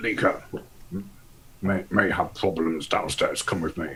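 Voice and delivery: quiet, hushed voice, under the breath. Voicing Peabody waking another character at night: hushed tone. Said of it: "in a sort of, like, a, a hushed tone".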